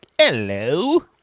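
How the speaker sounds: put-on British accent. Showing how one greets listeners from the UK: put-on British accent. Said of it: "every time I have somebody from the U K".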